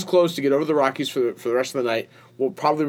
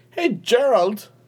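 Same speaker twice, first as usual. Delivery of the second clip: fake British accent, very high, called out; 10 semitones higher than usual. Greeting a friend the way a tv character does: fake british accent. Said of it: "like Lord John Mulberry".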